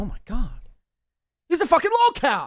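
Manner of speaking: acted smug certainty, very high and swooping. Retelling how Mercer said a line with total certainty. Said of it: "Mercer was like".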